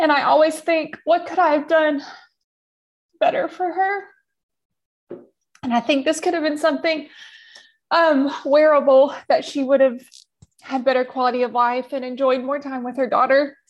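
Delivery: crying speech. A clt reflecting on what more could have been done for a patient: crying while talking. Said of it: "now that I'm done crying".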